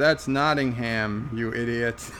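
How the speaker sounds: ordinary delivery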